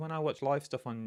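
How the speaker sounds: ordinary talk, nothing marked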